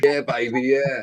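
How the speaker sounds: put-on English accent. Doing an Austin Powers impression for friends: Austin Powers voice. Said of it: "Does the English accent, Austin Powers".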